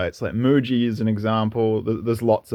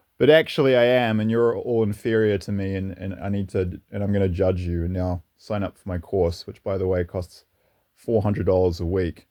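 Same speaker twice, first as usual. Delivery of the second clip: ordinary talk, nothing marked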